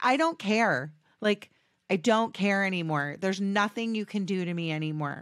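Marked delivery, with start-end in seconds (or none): none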